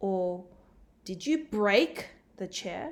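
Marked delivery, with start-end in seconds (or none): 1.0-2.9 heavy, punched stress on the word break. Example sentence showing how to emphasize one word, heavy emphasis on break. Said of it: "placing the emphasis on break".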